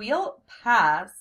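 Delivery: said firmly. The narrator turns down a dish a companion reads from the menu: firm refusal. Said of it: "I told her firmly".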